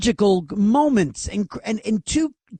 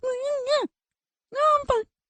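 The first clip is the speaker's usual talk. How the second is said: very high-pitched, rushed, rapid squeaky voice; 4 dB quieter than usual. Retelling a dinner partner's answer: imitating a very high-pitched voice. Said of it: "The pitch was so".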